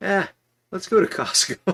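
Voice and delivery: acted, very high, loud, breezy, nonchalant, dismissive tone. Retelling the wife's answer to a tornado warning: imitating a nonchalant reply. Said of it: "I just love the nonchalance".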